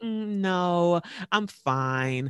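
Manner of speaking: put-on dismissive voice. Retelling a sibling brushing off advice to get tested: imitating someone acting above it. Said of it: "She just acted so above it".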